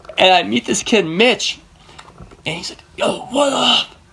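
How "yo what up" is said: high, tough street-gangster voice, full swagger. Speaker retells a kid he met greeting him, in a Godfather voice. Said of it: "he's got the Godfather voice type thing".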